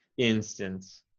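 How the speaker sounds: instance, first syllable stressed. In a pronunciation lesson, speaker models stress on the first syllable of Instance. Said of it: "here we're emphasizing the first syllable".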